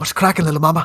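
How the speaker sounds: whispering. Whispering in character into a party member's ear: whispering in character. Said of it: "I'm gonna whisper in her ear".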